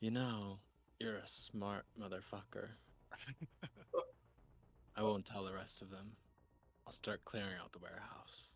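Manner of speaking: little whisper, close to the ear. Game master voices a figure behind a player's character; little whisper. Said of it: "It's like a little whisper".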